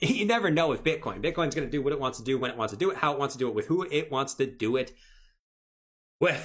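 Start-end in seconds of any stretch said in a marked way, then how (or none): 1.2-6.5 talking really, really fast, rattled off. Saying Bitcoin does whatever it wants: talking really fast. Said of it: "I just talked really, really fast".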